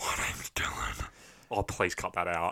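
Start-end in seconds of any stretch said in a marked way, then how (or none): 0.0-1.1 breathy, all-breath half-whisper. Introducing himself on a podcast: sounding like Megatron. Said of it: "You sound like Megatron".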